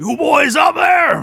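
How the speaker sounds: loud hailing call. Narrating a scene on a ship, a voice calls out from the east side, calling out loudly. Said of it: "hear a voice call out".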